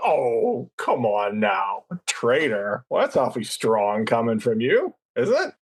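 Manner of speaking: flirty, teasing, sparring banter with swooping pitch. Speaker demonstrates a line in an enemies-to-lovers tone. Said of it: "enemies to lovers tone".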